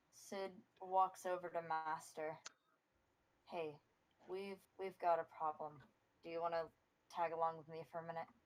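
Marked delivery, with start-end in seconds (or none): 3.5-8.2 hushed voice, faster. Player's character approaching the master about a problem: hushed tone. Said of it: "She says it in a hushed tone".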